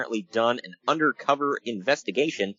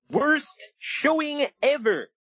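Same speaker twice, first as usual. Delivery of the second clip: fanboy voice pitched way up. Showing listeners his stock fanboy voice, Comic Book Guy fanboy voice. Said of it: "my stereotypical fanboy voice".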